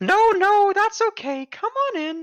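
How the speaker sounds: put-on very high-pitched little old lady voice. Asked whether guests should take off their shoes, the host answers in a Monty Python old lady voice. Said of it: "old lady voice really freaks me out".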